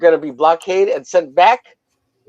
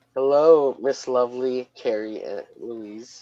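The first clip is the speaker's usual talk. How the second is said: effeminate put-on voice; 5 semitones lower, 9 dB quieter than usual. Reading out a chat message, imitating Eric: effeminate voice imitating Eric. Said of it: "I give Eric an effeminate voice".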